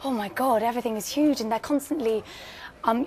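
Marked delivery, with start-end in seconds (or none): none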